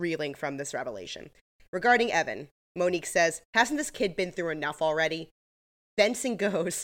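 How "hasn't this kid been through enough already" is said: ordinary talk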